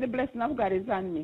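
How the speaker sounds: plain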